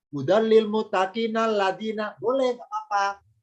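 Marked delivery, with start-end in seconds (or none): 0.1-2.1 read straight on without a break, pitched up. Indonesian lesson on stopping between verses, read straight through, no pause. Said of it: "saya baca langsung".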